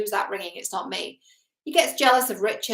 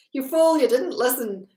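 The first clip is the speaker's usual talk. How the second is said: put-on Scottish accent; 4 semitones higher, 4 dB louder than usual. Recapping a film, the speaker quotes Thor's line: Thor in Scottish accent. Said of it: "Thor also has a Scottish accent at some point".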